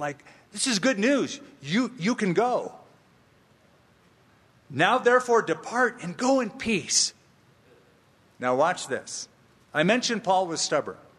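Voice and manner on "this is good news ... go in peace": high-pitched, excited delivery. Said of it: "He's probably saying it all excited".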